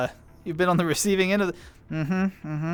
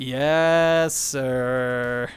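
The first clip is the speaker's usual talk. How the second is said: slow yes sir with sir dragged out long; 4 semitones lower than usual. Retelling how the brother answered the parents' chore requests, drawn-out yes sir. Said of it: "it was so drawn out".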